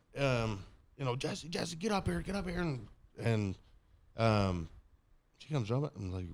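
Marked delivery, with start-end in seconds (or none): 1.2-2.6 play-acted high, urgent scream. Retelling calling someone upstairs while feeling sick: retelling a scream. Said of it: "I'm screaming".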